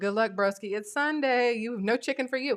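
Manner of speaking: ordinary delivery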